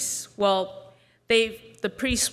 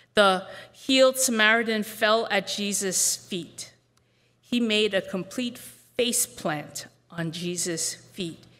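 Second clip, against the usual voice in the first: usual speaking voice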